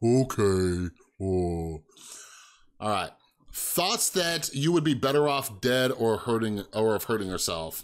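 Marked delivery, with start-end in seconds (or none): 0.0-3.1 very low, slow, dragged-out mopey drone. Recalling how the speaker used to talk when depressed, talking like Eeyore. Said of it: "I used to like talk like Eeyore".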